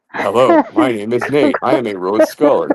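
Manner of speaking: ordinary, clear, perfectly normal speaking voice. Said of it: "when he gets high, he actually sounds normal".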